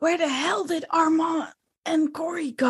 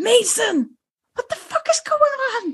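loud, pitched-up scream whisper, whispering as hard as possible; 7 semitones higher than usual. Game master voices a character calling out to a player character, scream whisper. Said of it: "She will do the scream whisper thing".

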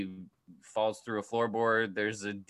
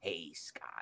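whispered, breathy delivery, almost whispering; 5 semitones lower, 14 dB quieter than usual. Imagining what he could have said to Scott: Michael Douglas impression. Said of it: "I can't do a Michael Douglas".

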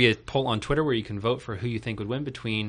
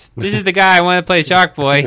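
very loud, pitched-up put-on voice, belted high; 7 semitones higher, 14 dB louder than usual. Retelling what a kid said to his dad: John Mulaney voice. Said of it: "In my John Mulaney voice".

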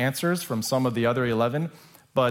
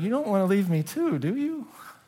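whiny preteen whimper, high and swooping; 8 semitones higher than usual. Reading Jesus's words to his twelve closest ones, in a whimpering voice. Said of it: "I always thought it was like a whimpering voice".

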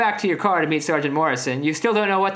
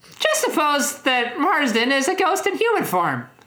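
very high, swooping, sing-song character voice; 10 semitones higher than usual. Reading a story line aloud as Lisa: Lisa Simpson voice. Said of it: "what's a good, uh, Lisa voice?".

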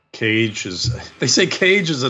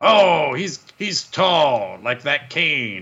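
slow, deliberate ringside announcer commentary voice; 4 semitones higher than usual. Imitating a commentator comparing wrestlers: j r voice. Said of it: "but J R, in contrast, just compares people".

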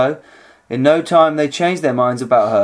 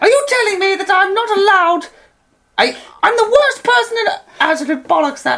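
very high-pitched put-on voice. Correcting a friend's take on a game character, in a high-pitch voice. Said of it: "He has a high pitch voice".

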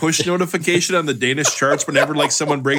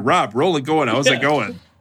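ordinary talk

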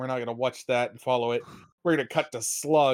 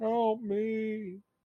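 very high, smothered, soft voice, last word stretched; 9 semitones higher, 5 dB quieter than usual. In a played scene, a voice calls for help from a box: very muffled voice. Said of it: "in a very muffled tone of".

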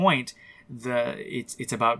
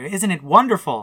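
very loud, high, exultant shout of joy; 5 semitones higher, 9 dB louder than usual. Retelling a film character calling to her parents: imitating a joyful yell. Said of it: "she yells to her, her parents".

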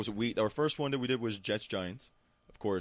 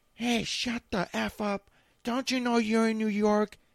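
put-on high, loud, slow, angry drunk yelling. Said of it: "She's like".

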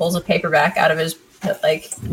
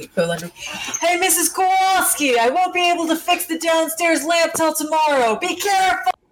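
very high, acted, top-of-the-lungs yelling; 11 semitones higher than usual. Describing calling out to someone, mock shouting at top of lungs. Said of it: "at the top of my lungs".

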